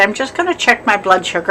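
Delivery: ordinary talk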